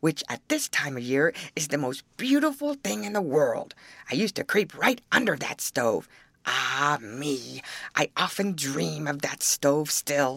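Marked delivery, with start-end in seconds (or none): none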